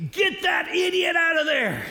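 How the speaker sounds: very loud, shrill, screaming heckle. Retelling a grandfather shouting during a movie: imitating a loud scream. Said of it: "but very loudly screams".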